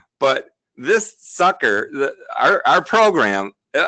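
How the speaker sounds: slow speech, laughing through the words, helplessly amused. Showing a software tool and its results, laughing while talking. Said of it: "I'm sorry, I'm laughing".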